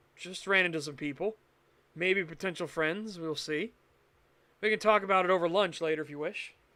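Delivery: ordinary delivery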